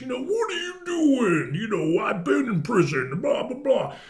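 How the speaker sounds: rough, gruff put-on voice. Show how Joey does it more, in a rough, gruff Randy Macho Man Savage voice. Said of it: "Kind of like Randy Macho Man Savage".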